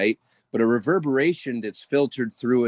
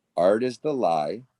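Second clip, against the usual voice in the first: spoken slowly, at a slow pace; 2 semitones lower than usual. Repeating a quote slowly as asked, said slowly. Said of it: "Say it slow again".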